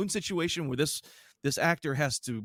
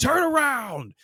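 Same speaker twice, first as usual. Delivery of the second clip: put-on yell, higher and louder; 11 semitones higher, 7 dB louder than usual. Retelling how the officer at the station yelled at her: imitating someone yelling. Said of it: "starts yelling at her".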